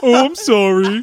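empty, disappointed delivery. Imitating how a dad apologized: imitating a dad's apology. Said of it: "apologizing the same way my dad did".

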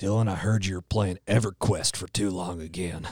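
stern, strict, enforcer-like scolding character voice. A podcast host voices their created character Frank addressing Dylan: Frank character voice. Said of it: "His name is Frank".

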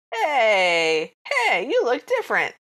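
put-on very slow, drawn-out, swooping Brooklyn accent. Retelling what one of the little comedy men said; Brooklyn or New York accent. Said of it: "they've all got like Brooklyn accents or New York accents".

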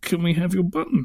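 mock sheepish, awkward tone. Recalling going back to people on filming day, retelling a sheepish request. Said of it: "me kind of sheepishly saying".

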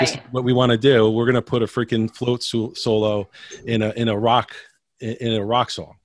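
ordinary talk

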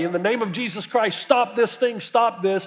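acted-out ringing shout, high and projected loudly. Telling a story, a man in the arena calls out before everybody, retelling a shout. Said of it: "he shouts in front of everybody".

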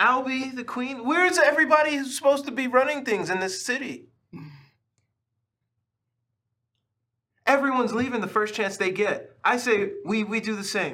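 high, loud shouting with voice way up. Playing Locke, who throws up his hands at another character: Locke shouting. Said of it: "Stop shouting".

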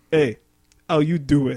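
put-on Cuban-sounding accent. Retelling how a friend greeted some ladies, in a cuban accent. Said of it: "But he sure talked like he was".

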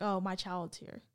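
normal talking voice

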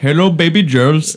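put-on Indian accent. Imitating a kid who drove in to do comedy: imitating an indian accent. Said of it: "kid drove over from India".

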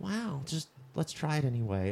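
hushed, calm, unbothered murmur, barely above breath. Retelling a scene where Owen Wilson answers someone: soft, calm Owen Wilson voice. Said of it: "his soft, calm voice".

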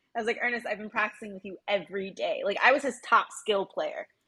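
ordinary talk, nothing marked

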